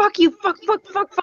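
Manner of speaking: high, frantic, crazed swearing fit. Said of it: "just having a fucking crazy fit".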